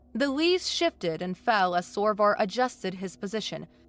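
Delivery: plain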